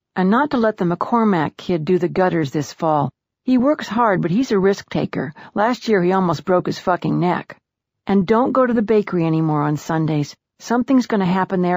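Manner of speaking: ordinary delivery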